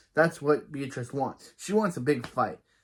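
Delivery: plain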